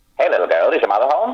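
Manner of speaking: put-on old-timey nineteen-thirties salesman patter. Showing the traveling salesman character he used to do: old-timey 1930s voice. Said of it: "talked in a kind of old time nineteen thirties voice, sort of like this".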